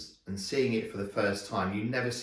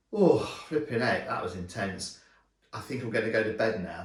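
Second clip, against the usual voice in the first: ordinary talk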